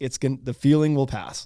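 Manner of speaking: ordinary talk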